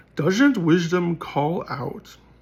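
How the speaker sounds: put-on storybook fantasy narrator voice. Reading a passage aloud in a put-on fantasy voice. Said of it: "should I do the fantasy voice? I do love the fantasy voice".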